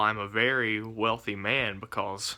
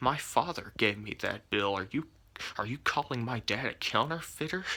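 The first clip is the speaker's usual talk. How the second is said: mock-angry, acted-out anger; 4 dB quieter than usual. Speaker retelling confronting a cashier who called his bill fake, retelling angry words. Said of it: "So now I'm getting angry".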